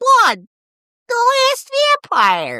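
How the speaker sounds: very high, swooping, slow, drawn-out sing-song voice. Reading a can label aloud in Andy Richter voice. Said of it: "Andy Richter voice".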